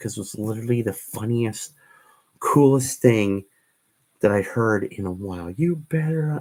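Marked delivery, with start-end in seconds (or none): 5.5-6.4 high, screaming, yelled drill-sergeant voice. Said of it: "trying so hard not to laugh".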